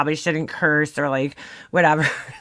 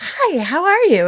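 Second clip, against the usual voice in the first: high, slow, sweet, put-on polite phone voice; 13 semitones higher, 3 dB louder than usual. Recalling their mom answering the phone after screaming at the kids: imitating mom's phone voice. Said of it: "your phone voice".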